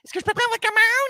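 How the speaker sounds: squeaky, very high-pitched, quick chatter. Retelling a girl answering the coffee order audio in french, imitating her high-pitched voice. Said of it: "she had this high pitched voice".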